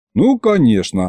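ordinary talk

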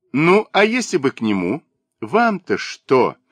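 cheeky, pert, defiant, challenging tone. Answering the old maid's mocking question, she fires back, defiant and pert. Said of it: "спросила она задорно".

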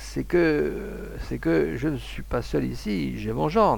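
halting, unsure, slow, hesitant murmur. A hunter, after long reflection, murmurs hesitantly to those around him. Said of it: "il murmura, hésitant".

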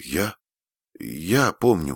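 quavering, trembling, faltering, words hard to get out. Frannie answers Susie's question about Latin, trembling voice. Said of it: "дрожащим голосом ответила Фрэнни".

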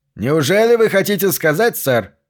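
cheerful, bright, cheery tone. At a press conference, the mayor replies to a questioner, speaking cheerfully. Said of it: "произнес мэр весело".

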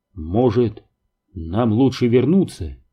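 ordinary delivery

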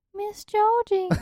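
put-on very high little-kid voice. Getting into character to play the other speaker as a kid, child voice. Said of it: "That's my best child voice".

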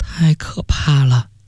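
quavering, trembling, frightened voice. Reacting to talk of killing someone, trembling voice. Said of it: "焦三菱声音颤抖了".

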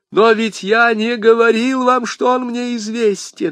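high, anguished cry in despair. Accused man protesting to the commissioner, exclaiming in despair. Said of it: "в отчаянии воскликнул Бонасье".

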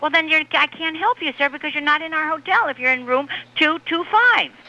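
shrill yelling, pitched way up. Arguing with a hotel guest on the phone about his room: yelling. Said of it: "why are you yelling at me?".

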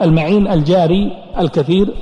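ordinary talk, nothing marked

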